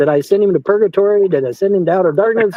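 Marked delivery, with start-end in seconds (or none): none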